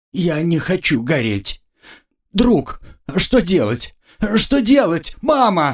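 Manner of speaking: high, frightened pleading, panicked, almost a wail. A partner told the inquisitor wants him burned, almost wailing. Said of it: "почти завопил напарник".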